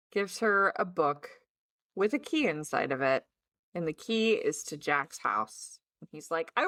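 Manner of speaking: plain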